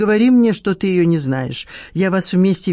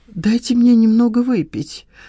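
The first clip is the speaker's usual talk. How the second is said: mumbled, pitched slightly up; 5 semitones higher than usual. Skameikin, eyeing the flask in Nadezhda's hands, answers her: mumbling. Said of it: "пробормотал Скамейкин".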